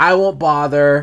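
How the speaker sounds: ordinary delivery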